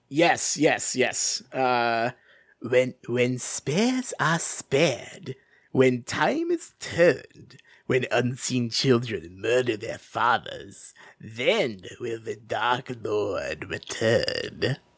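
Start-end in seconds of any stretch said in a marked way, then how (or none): 1.5-14.7 menacing emperor delivery. Reading a prophecy aloud in a play at another speaker's request, in Palpatine voice. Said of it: "Can I get the Palpatine voice for the prophecy?".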